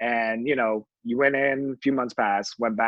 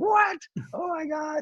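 mock scream, much higher and slower. Recalling being offered a part in Mulan, retelling a scream. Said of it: "And I just started screaming".

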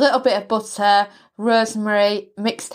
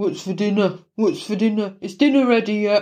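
put-on moody, sulky teenager voice, insistent and repetitive. Talking about her kids growing up one day, imitating Carl as a moody teen. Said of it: "turn into moody teenagers and just say".

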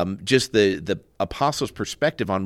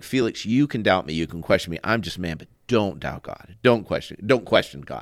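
acted, reenacted serious tone of voice. Speaker retells what he told a man named Felix who doubted God: retelling serious words. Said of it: "And I got real serious".

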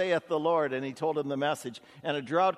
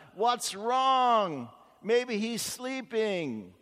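put-on very slow, high, jeering taunt; 7 semitones higher than usual. Retelling a man's taunts at prophets screaming at their god, acting out the mocking. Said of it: "Elijah was off to the side mocking them".

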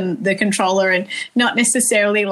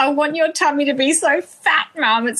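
put-on words bubbling through laughter, high and giggly; 6 semitones higher than usual. Mother retelling her son's words, imitating him laughing as he speaks. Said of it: "He's like laughing as he says it".

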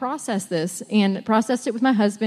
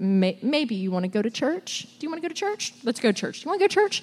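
soft, timid, nervous, hesitant, rising, repeated; 2 semitones higher, 5 dB quieter than usual. Recalling how they asked her, as they did back then: retelling a timid ask. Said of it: "I think I asked a little timidly".

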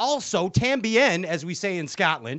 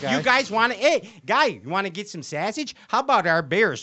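strong, laid-on Chicago accent; 3 semitones higher than usual. Host introducing the next anglers, slipping into a Chicago accent. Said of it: "I sounded really Chicago right there".

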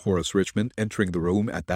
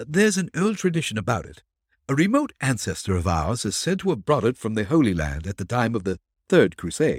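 plain reading voice

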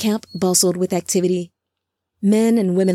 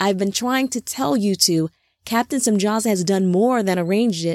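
ordinary delivery

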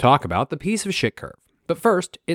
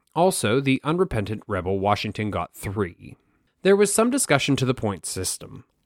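plain

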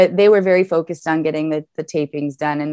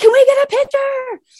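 very high-pitched, eager, excited starstruck fan voice. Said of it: "we were like".

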